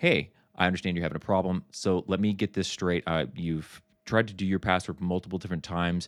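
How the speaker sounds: no-nonsense, straight to the point. Illustrating a tone for a customer with a password problem: direct and firm. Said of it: "be direct, be firm, and I'm using that voice now as an illustration".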